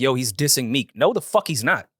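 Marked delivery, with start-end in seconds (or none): none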